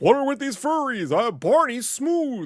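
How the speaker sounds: put-on voice, very high and belted out loudly. Joking about a purple dinosaur character: Santa voice. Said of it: "why am I using Santa's voice?".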